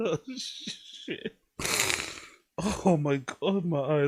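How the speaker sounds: very slow, breathy whisper, drawn out, laughing to tears. Reacting to a video, crying with laughter. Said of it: "I'm sorry, I'm sorry".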